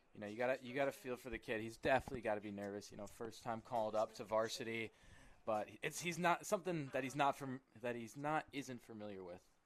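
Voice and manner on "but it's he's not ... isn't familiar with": stuttering, stumbling over words with repeated restarts. Discussing a young pitcher's first varsity start, stuttering. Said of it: "Sorry for my stutter".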